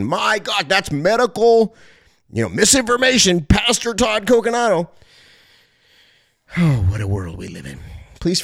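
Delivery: a little worked up, passionate. Live on the radio, complaining that YouTube flagged the channel, a little passionate. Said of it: "forgive me i know i sound a little bit passionate".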